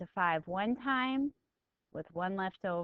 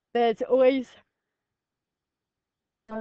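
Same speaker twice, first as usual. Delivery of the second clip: words swallowed by a very loud, level yawn; 4 semitones higher, 10 dB louder than usual. Explaining steps in a tutorial while still tired: yawning. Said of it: "I'm yawning because I'm still tired".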